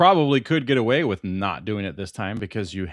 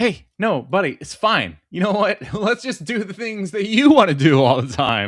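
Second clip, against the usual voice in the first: high, pointed, fake passive-aggressive put-on resigned tone; 8 semitones higher, 4 dB louder than usual. Replying to a co-host who teases about being mean: mock passive-aggressive. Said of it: "now [name]'s doing it passive aggressively".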